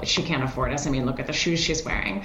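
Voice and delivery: ordinary delivery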